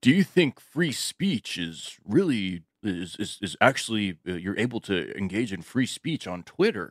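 slow, halting, drawn-out delivery, tripping over words. Retelling a poll posted online in an Elon Musk impression. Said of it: "That's my Elon Musk impersonation".

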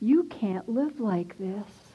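mock kindly, sympathetic voice, close. Retelling a voice heard in the ear: imitating a sympathetic tone. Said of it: "in a sympathetic tone".

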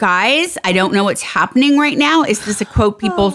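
plain

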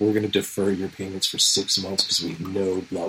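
soft, hushed commercial ad voice. Imitating a car company's payment-deferral announcement: imitating Ford's soft ad voice. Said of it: "they've got this soft, like, voice".

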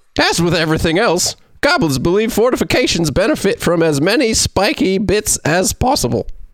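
put-on fantasy goblin character voice. Reading a passage aloud in a chosen voice, in a goblin voice. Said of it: "That's a goblin".

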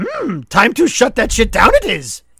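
high, swooping alien-sage voice with swinging pitch. Ending the podcast in a cartoon voice: Yoda voice. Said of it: "Is Yoda?".

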